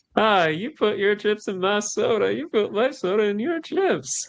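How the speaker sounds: put-on drugged voice. Retelling a scene of a character high on pain meds: imitating someone high on pain meds. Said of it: "high, off of pain meds and just being like".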